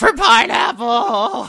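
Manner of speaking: screaming, yelling voice. Voicing thirteen characters bursting out of a cell: screaming. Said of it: "burst out of the cell screaming".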